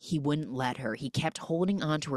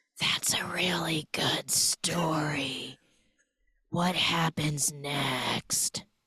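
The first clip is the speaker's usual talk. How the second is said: put-on whisper. Retelling a movie scene where the father answers: imitating a whisper. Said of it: "And then he whispers".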